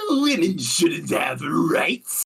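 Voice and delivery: high-pitched goblin voice. Speaker shows the other how to say the line, Hearthstone goblin card voice. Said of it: "do it in a goblin voice".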